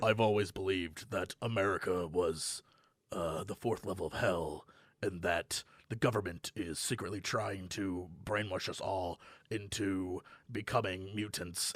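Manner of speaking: very deep, low, hushed voice. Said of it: "he has that really, really deep voice".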